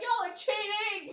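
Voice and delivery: very high, shrill, loud yell. Playing a character who sees another plummeting past: yelling in character. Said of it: "I'm just yelling".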